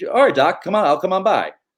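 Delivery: light, sweet, high voice. Showing the difference between the two voices, the speaker does a light Bruce Wayne voice. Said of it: "Can you can you switch between the voices if you're doing your impression?".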